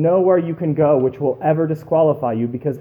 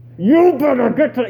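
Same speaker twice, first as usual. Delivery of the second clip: mock yell through gritted teeth, much higher; 8 semitones higher, 4 dB louder than usual. A parent acts out what they say to their kids: retelling a yell through teeth. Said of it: "I scream through my teeth".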